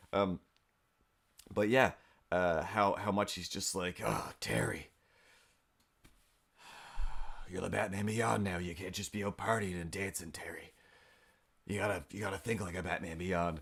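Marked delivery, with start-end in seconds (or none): 4.0-13.6 put-on cranky, aged-up, scolding old voice. Retelling old Bruce Wayne scolding Terry: imitating cranky old Batman. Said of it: "voice actor just acting a little bit older, a little bit crankier".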